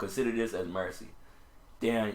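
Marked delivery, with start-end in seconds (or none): none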